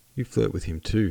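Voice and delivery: ordinary talk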